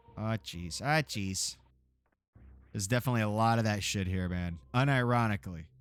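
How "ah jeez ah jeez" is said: Upper Michigan accent. Playing around on stream, saying a phrase in a put-on Yooper accent. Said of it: "I'm doing a real Yooper".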